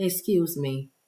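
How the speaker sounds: soft, low, quiet, polite voice.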